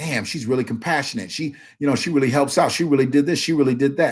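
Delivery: ordinary delivery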